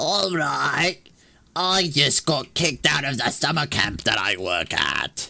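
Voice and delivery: put-on British girl accent. Retelling a girl's phone call on a bus: british accent. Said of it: "I gotta try to do a British accent".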